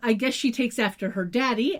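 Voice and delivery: ordinary talk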